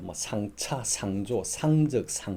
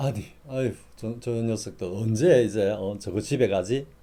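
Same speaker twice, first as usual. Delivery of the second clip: plain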